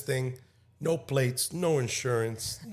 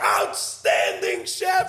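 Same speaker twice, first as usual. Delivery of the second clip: put-on, very high, loud yell; 5 dB louder than usual. Retelling answering an early-morning phone call, retelling a yell. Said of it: "yelling back".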